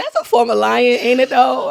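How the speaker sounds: plain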